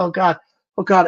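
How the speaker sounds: slow, terrified, frightened voice full of helpless dread. Retelling feeling the room get brighter, imitating own terrified words. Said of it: "I'm shaking to death".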